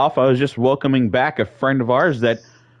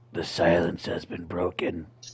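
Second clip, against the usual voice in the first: spooky, creepy, eerie and unsettling; 8 semitones lower, 10 dB quieter than usual. Retelling what she said after looking over at the speaker, in a creepy voice. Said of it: "in a real creepy voice".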